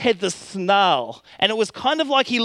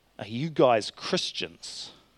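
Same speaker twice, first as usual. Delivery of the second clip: very low, quiet, menacing snarl; 11 semitones lower, 8 dB quieter than usual. A youth pastor retells what a young man asked him; retelling a menacing snarl. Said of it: "through a menacing snarl".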